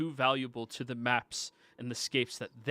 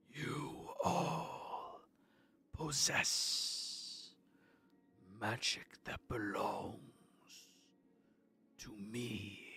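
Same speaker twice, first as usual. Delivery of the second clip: very quiet, echoing, whispery voice; 3 semitones lower, 10 dB quieter than usual. A game master voices a being that stares up at the players: echoey, whispery voice. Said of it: "this echoey, whispery voice".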